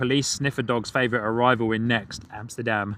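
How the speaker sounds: ordinary talk, nothing marked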